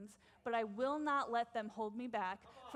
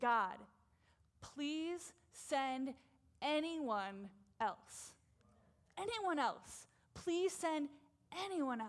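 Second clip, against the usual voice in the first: slow, begging, pleading tone, almost commanding; 4 semitones higher than usual. Preaching on a Bible story, acting out a begging plea. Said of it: "begging, pleading, almost command".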